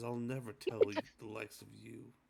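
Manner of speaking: growling and grumbling voice. Telling what he says when asked about the mirror, in a grumbling, growling voice. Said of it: "He he sort of grumbles and growls".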